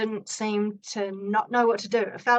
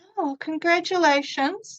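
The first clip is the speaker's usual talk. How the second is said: put-on gritted teeth, much higher and louder; 7 semitones higher, 3 dB louder than usual. Retelling a woman's congratulations to the speaker, imitated through gritted teeth. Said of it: "through her gritted teeth".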